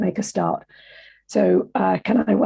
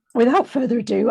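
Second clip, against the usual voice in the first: plain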